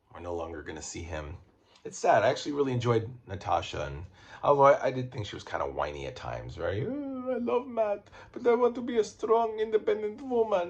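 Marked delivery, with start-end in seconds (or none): 6.8-10.7 put-on Russian accent, high pitched. Recapping a show, acting out a character's lines, Natasha impression with Russian accent. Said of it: "That's my Russian accent".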